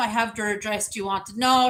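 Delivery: ordinary talk, nothing marked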